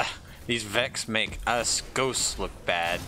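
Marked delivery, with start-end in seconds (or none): none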